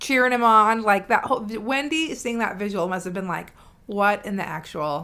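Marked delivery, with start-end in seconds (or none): none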